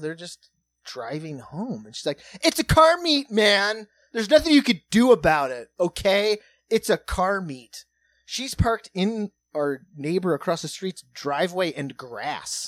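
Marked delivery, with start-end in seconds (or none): 2.4-7.8 very loud, high-pitched shouted yelling. Retelling how a woman at a car meet yelled at passing drivers: retelling a woman yelling. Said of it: "she's like yelling at these cars".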